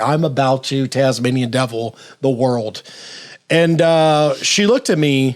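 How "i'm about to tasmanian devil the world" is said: ordinary delivery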